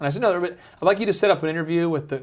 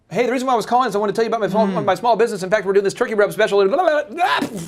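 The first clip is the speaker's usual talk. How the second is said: hurried, rushed, high-pitched salesperson gabble; 5 semitones higher, 3 dB louder than usual. Demonstrating how not to sound when calling someone: rushed, hurried delivery. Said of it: "don't rush. Don't sound like you're".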